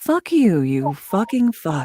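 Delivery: gentle, calm, soothing radio announcer delivery. Guest asked by the host to say a nasty line, in a soothing voice. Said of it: "nasty things in a soothing voice".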